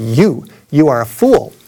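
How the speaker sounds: slow, deliberate, drawn-out street preacher-style proclamation. Recalling a man with a loudspeaker answering his shout, imitating a booming voice. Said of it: "he said with a booming voice".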